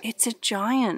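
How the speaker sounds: soft murmur under the breath. A character peering over a branch at a giant, murmured. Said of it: "murmured Snugglepot".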